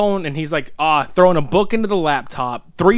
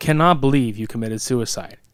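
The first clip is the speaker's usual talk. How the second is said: mock monotone voice, much lower; 4 semitones lower than usual. Recounting how someone scolded them like a small child, imitating a monotone dad voice. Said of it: "Super monotone, super dad mode".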